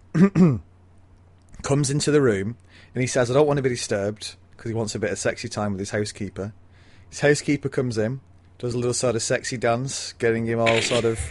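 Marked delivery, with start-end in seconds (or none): none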